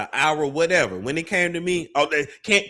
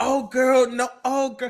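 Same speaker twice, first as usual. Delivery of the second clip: higher, fake friendly, sugary sweet voice; 8 semitones higher than usual. Showing how a fake, friendly reaction would have sounded: fake friendly voice. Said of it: "But I could have been fake, like".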